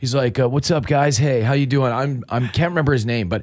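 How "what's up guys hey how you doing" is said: put-on surfer dude voice. Retelling how the doctor greeted them: imitating a surfer dude. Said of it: "He's like the surfer dude, man".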